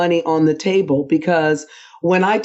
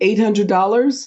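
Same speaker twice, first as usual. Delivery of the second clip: "eight hundred dollars" with rising question tone on "dollars". Acting out someone answering their day rate, rising tone on eight hundred dollars. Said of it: "you said eight hundred dollars like it's a question".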